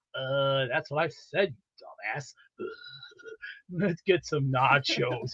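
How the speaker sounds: slow, drawn-out cartoon drawl, every word dragged out. Showing the other speaker an impression of Beavis and Butthead: Beavis impression. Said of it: "I can actually do the best impression of Beavis and Butthead".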